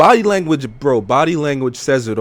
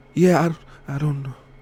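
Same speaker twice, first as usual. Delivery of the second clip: frightened mumble, halting, words stumbling out; 4 dB quieter than usual. Describing how a scared person tries to finish a sentence: imitating a scared murmur. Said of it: "it kinda murmurs out like".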